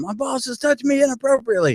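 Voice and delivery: loud, shrill, very high-pitched screaming yell. Retelling screaming at people walking by: imitating own screaming. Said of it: "I was screaming at people".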